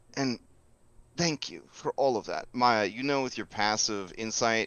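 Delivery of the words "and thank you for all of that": voice wet with tears, crying through the words. Voicing a crying character saying goodbye: crying while speaking. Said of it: "He's already crying, and he says".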